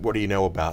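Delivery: ordinary delivery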